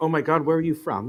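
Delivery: normal talking voice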